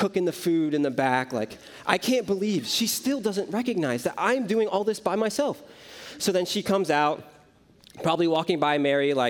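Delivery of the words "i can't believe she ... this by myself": put-on put-upon, exasperated, fed-up complaining. Retelling how Martha grumbled in the back: imitating frustrated Martha. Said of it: "And she's just frustrated".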